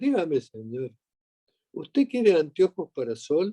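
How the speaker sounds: plain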